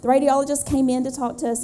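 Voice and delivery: quick, hurried speech.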